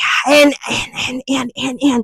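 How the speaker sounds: soft, breathy half-whisper, badly kept down. Mocking people who talk loudly in a library: imitating people failing to whisper. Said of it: "y'all can't even whisper properly anymore".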